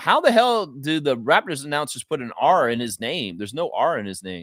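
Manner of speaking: ordinary talk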